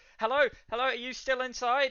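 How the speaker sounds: high, loud, desperate calling. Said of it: "just, like, desperate".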